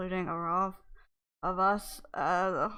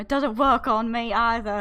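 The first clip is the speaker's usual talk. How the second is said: huffy, miffed, raised vampire voice; 3 semitones higher, 7 dB louder than usual. Voicing the vampire Orov answering that it doesn't work on him: huffy vampire voice. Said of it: "He gets all huffy".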